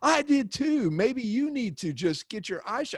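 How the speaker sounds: shrieking, outraged, indignant screaming. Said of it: "she was screaming at me".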